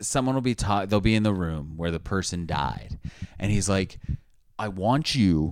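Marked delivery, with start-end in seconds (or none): 4.6-5.5 put-on dramatic TV investigator host voice. Acting out how he sends someone into the room where the person died, good Zak Bagans impression. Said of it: "that was a really good impression".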